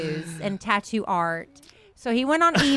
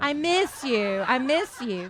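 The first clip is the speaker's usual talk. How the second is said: teasing, very slowly stretched, drawn-out echo. Imitating a partner who kept saying he missed her: imitating partner saying I miss you. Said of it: "That is what you used to say".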